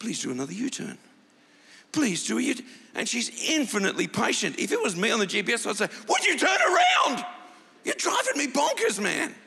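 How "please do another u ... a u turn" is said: put-on calm English accent. Imitating the car's GPS lady repeating directions, in a patient English-accent GPS voice. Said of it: "She's got an English accent".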